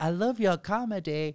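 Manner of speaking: put-on nonspecific European accent. Retelling what a man said when she answered the phone: put-on european accent. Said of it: "European, but he's like".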